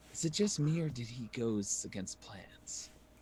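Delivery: secretive, hushed half-whisper in character voice. Speaking in character to another party member while walking: half-whispering in character. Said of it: "kinda whispering to each other".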